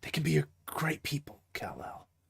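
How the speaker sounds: hushed, steady, calm, intent near-whisper. Imagining a casting choice, speak to Kal-El in a calm, hushed, purposeful John Wick voice. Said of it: "very calm, hushed, but like very purposeful way".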